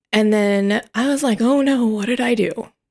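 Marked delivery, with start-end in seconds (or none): none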